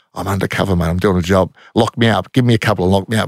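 put-on whisper. Retelling a whisper into a squad mate's ear during a headlock: retelling a whisper. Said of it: "I'm trying to whisper in his ear".

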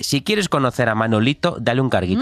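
plain

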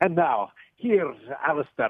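rough fake Scottish brogue, high and slow. Joking about introducing the next program: fake Scottish accent. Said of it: "a fake Scottish accent".

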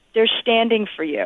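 confiding, private aside for one listener. Retelling what a man on stage said during their standing ovation: retelling an under-breath murmur. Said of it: "Dave says to me under his breath".

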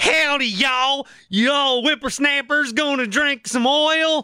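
clumsy fake Texas accent. Showing off his real texas impression: bad texas accent. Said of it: "Here's my Texas. Here's my real one".

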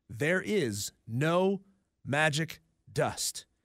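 very slow, deliberate, each word spaced apart. Repeating a line to a texter who needs it spelled out: slowly. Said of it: "say that again slowly".

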